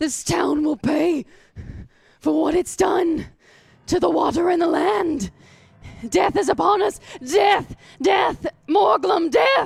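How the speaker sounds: loud, high, possessed-sounding madman ravings. Voicing a possessed prisoner turning back to the players: raving like a madman. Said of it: "in the ravings of a madman".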